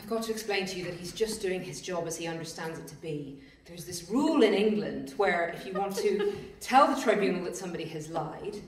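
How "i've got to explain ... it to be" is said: ordinary talk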